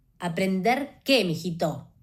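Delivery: still angry. A mother answers her son's question, still angry. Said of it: "todavía enojada".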